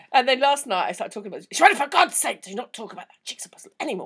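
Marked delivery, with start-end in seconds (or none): 1.5-4.0 stern, put-on scolding telling-off tone. Retelling what the other speaker said last night: impersonating a friend in that tone. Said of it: "when she does an impersonation of me".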